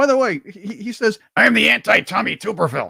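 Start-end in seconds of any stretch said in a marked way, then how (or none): 1.4-2.9 rough, creaky, raspy coach voice. Quoting a politician's line in a voice worked on: Tim Walz impression. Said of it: "I've worked on this voice".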